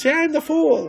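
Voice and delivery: high whiny character voice. Describing a film's characters, imitating the Fool's high, kind of whiny voice. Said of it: "got a high, kind of whiny voice".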